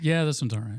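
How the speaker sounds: mock begrudging child voice, reluctant and sulky. Asking if the kids praise songs reluctantly: imitating a begrudging kid.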